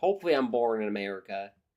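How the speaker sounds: Alabama southern accent. Answering that he sounds American, saying a line in a Southern US accent. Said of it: "That's my southern accent".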